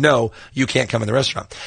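ordinary talk

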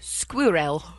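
squirrel pronounced with a British accent. Asked how the Brits say squirrel, answering: British accent on squirrel. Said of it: "How did the Brits say squirrel?".

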